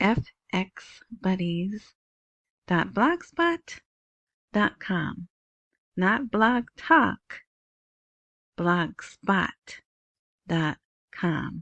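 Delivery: slow, deliberate, drawn-out, unhurried delivery. Spelling out a blog address so the transcript is clear, speaking slowly. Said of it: "I'm saying that slowly".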